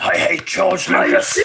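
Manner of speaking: really grumpy alien voice, sour and bitter. Voicing a figure said to be bitter about a lost Yoda audition; grumpy Yoda voice. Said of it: "It sounds like a really grumpy Yoda".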